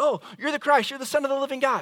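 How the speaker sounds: impulsive blurted exclamation. Speaker retelling how a disciple suddenly speaks up to Jesus, retelling a blurted exclamation. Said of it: "he just blurts out".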